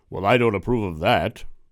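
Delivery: very loud, booming god voice. Acting out the judgmental God over top of us, in a James Earl Jones God voice. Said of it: "That's my God voice".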